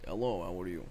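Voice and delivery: put-on, shown-off Russian accent. Asked to do a Russian accent, the speaker gives one a try. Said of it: "do a Russian accent".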